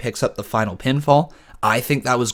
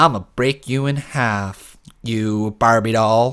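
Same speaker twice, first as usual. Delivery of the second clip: put-on slow, drawn-out, whiny and sassy teen girl voice. Speaker complaining about a wrestler, quoting her line, whiny, sassy Nia Jax impression. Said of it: "She comes across as the whiny".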